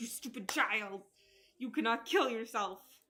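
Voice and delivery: put-on angry scolding mother voice. Joking about a mom pulling out the chancla: imitating a scolding mom. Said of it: "pull out the chancla on Cinderella and be like".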